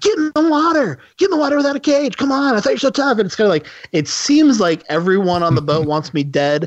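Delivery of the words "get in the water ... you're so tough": acted-out, very high-pitched shout. Retelling a movie scene where a son dares his father: imitating someone yelling. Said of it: "his son's yelling at him".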